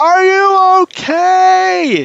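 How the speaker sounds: very loud voice. In the game, a character checks that Scald is okay, possibly shouting. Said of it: "Am I shouting? I can't tell".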